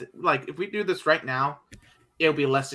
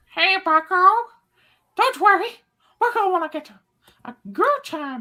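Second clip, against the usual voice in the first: very high, loud, squeaky cartoon voice; 6 dB louder than usual. Trying again after a terrible impression of someone else, it comes out as a Mickey Mouse voice. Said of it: "that's a very good Mickey Mouse impression".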